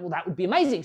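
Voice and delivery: ordinary talk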